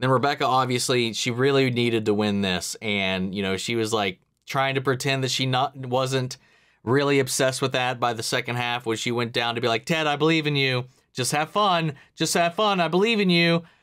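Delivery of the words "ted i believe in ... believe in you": mock overdone, gushing, high-pitched over-the-top cheer. Retelling how Rebecca cheered on Ted: imitating Rebecca's over-the-top encouragement. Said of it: "the overtop way she was trying to present that".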